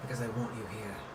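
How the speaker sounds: creepy, soft, purring villain voice.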